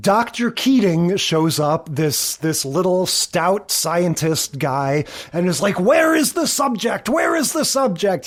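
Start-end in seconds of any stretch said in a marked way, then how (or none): 5.8-8.3 high, giddy, excited voice. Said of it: "He's all giddy".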